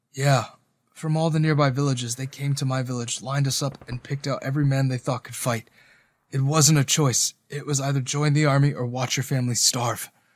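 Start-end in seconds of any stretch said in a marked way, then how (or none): none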